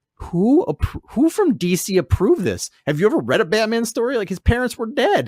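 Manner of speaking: incredulous outrage, pitched way up in disbelief.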